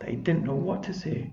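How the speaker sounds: ordinary delivery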